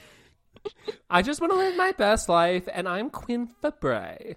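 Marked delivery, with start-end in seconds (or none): 1.1-4.4 whining, high pitched voice. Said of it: "like, whiny".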